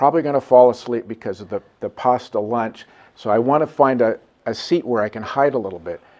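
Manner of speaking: ordinary talk, nothing marked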